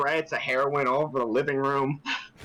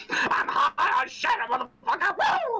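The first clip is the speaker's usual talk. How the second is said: very high scream, swooping all over. Screaming in character during a game scene: Dave Chappelle impression. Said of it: "I'm doing my best Dave Chappelle".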